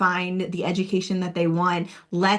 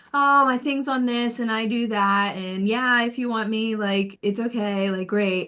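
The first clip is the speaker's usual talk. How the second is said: lukewarm, unenthusiastic, half-hearted, can't-be-bothered delivery; 3 semitones higher than usual. Imitating an applicant pitching a talk video: imitating an unexcited pitch. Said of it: "if you're not giving it to us and selling it and making it exciting".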